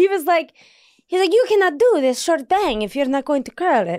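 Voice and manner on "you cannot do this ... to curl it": put-on Italian male accent. Speaker quoting an Italian man's advice about her bangs, Italian accent. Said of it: "I can do this accent because I am half Italian".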